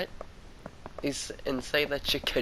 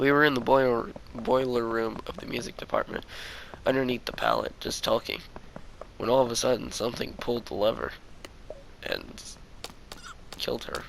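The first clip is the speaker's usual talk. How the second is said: plain reading voice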